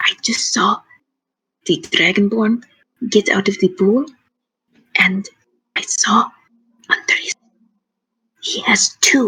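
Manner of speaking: secretive, hushed, conspiratorial whisper. Voicing a character sharing gossip up close: conspiratorial whisper. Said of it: "despite the fact that she's whispering".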